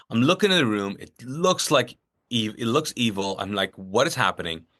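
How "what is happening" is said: mock panicked voice, lower pitch. Recounting a frightening moment in a room, retelling panicked words. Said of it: "freaking out".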